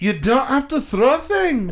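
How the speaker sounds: Scottish-sounding accent, pitched high. Joking around with the others in a put-on voice: Scottish accent. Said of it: "That was Scottish".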